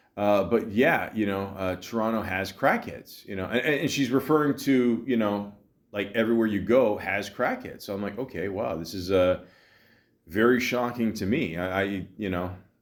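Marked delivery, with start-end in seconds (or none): none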